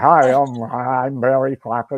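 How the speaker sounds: fake, loud, slow, stagey American accent. Recalling a stage act done with American accents: put-on American accent. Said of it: "doing the act with American accents".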